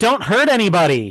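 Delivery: loud cry called out over other voices. Chauncey sidles up to the conch after everyone's turn and shouts in: shouting. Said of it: "he's gonna just shout in".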